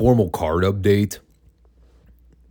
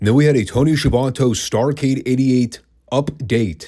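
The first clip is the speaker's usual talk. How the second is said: high, slow up-date with both halves stressed. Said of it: "I do stress the words up and date".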